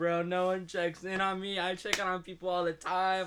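put-on weepy, high, tearful crying voice. Retelling own words from a photo moment, imitating own crying. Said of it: "crying, and I was like".

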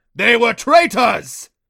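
high, shrill, loud, booming roar. Reading a story about magical creatures, the narrator voices a creature retorting, roaring. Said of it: "It roared".

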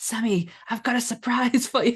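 mock whispering. Retelling what Jake whispered into his microphone, imitating Jake's whisper. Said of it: "Jake literally whispered into his microphone".

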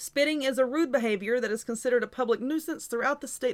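ordinary delivery

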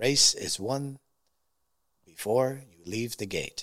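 clumsy attempt at a put-on French accent. Retelling what a man once told him, in an imitated French accent. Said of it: "with his French accent, I can't do it very good".

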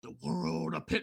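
put-on deep voice. Retelling a character's dramatic line: imitating a deep voice. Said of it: "in this deep, you know, voice".

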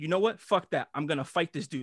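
plain

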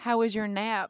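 put-on Southern US accent, held throughout. Retelling leaning over to ask a question, in a put-on southern accent. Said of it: "I hold up the southern accent".

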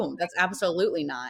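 ordinary talk

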